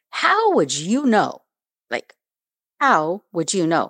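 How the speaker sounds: put-on stern, demanding voice with swooping pitch. Retelling questioning an officer about the news: retelling a stern question. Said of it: "I looked at him sternly".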